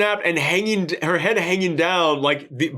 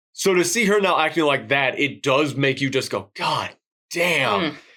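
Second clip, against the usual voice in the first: ordinary talk, nothing marked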